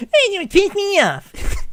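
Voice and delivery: very high, slow, mocking sing-song.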